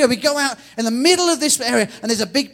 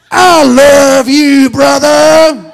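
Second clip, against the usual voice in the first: put-on heavy, big, booming Texan accent, very loud; 2 semitones higher, 12 dB louder than usual. Acting out a man who walked up to him, in a big texan accent. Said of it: "with a big Texan accent".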